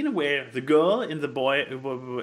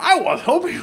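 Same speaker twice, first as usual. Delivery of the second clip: put-on very disappointed tone, higher and louder; 6 dB louder than usual. Retelling what a godmother said after a movie, imitating her really disappointed tone. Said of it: "in this really disappointed tone".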